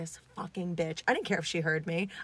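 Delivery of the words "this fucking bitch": muttering under breath, quieter and lower. Retelling cursing at a woman during a flight, muttering under breath. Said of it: "under my breath being like".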